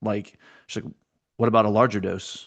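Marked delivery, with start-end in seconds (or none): 1.4-2.5 put-on cold, chilling, icy delivery. Retelling a character's question to another speaker: imitating a cold, chilling delivery. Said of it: "all the warmth of a serial killer".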